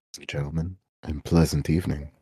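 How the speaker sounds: over-the-top, put-on, seductive, sensual tone. Greeting the audience after being asked to say hello: put-on sensual voice. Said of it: "saying things with a sensual voice".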